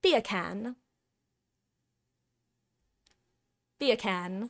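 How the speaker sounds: put-on British accent. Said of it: "If you say that with a British accent".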